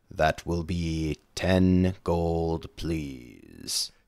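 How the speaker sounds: low, soft, utterly dull voice. Voicing a vendor who looks at the player and asks for payment, very monotonous voice. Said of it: "in a very monotonous voice".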